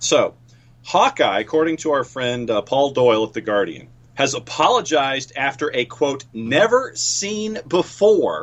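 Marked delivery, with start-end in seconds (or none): 6.3-8.4 dripping with skepticism, swooping pitch. Quoting a phrase from a newspaper report: dripping with skepticism. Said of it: "dripping with skepticism".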